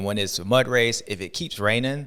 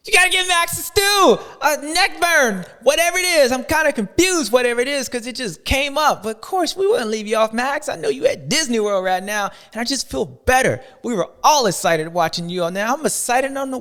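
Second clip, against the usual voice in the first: happy, excited, loud shouting; 5 dB louder than usual. Speaking to Max, who is at Disney World, excited yelling. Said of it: "Why am I yelling?".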